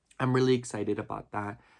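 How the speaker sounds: normal talking voice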